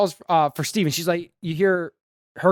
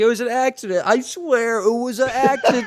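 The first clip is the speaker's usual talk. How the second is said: put-on crying voice, higher; 5 semitones higher than usual. Retelling a scene where Steven cries in interrogation: imitating Steven crying. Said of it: "and he's crying".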